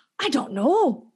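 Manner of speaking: high British accent. Answering a request to say a line in Perry's accent. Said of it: "Can you say that in Perry's accent?".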